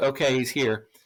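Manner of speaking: ordinary talk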